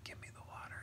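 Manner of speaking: very quiet, hushed whisper. Speaker recounts an actor's line from a movie, whispered Timothée Chalamet impression. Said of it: "he kind of whispered".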